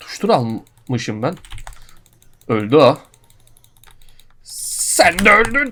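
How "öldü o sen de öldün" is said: very slow, dragged-out, rising yell. During a game stream, the speaker is yelling. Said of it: "Bağırma lan milletin içinde".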